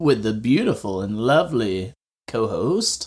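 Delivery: slow, drawn-out flourish, lingering on every word. Podcast host introducing his co-host at the top of the episode, drawn out. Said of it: "That was really drawn out".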